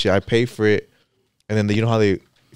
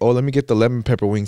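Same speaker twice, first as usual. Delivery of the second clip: ordinary delivery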